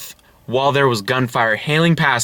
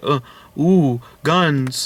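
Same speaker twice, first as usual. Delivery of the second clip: mock awed, easily wowed, impressed tone. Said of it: "seven people that are just like".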